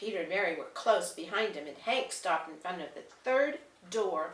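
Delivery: plain reading voice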